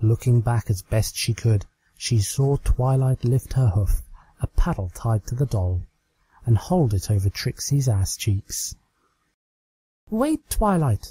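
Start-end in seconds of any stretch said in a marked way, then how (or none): 10.1-11.1 desperate, pleading tone at very high pitch. Calling out to a pony raising a paddle over her, desperate. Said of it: "she said desperately".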